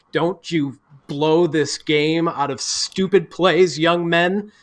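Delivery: put-on stern fatherly voice. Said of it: "with that tone of voice".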